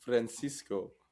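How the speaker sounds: strong, heavy Lebanese Arabic accent. Showing how to say the sandwich name right: Lebanese accent. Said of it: "Lebanese accent".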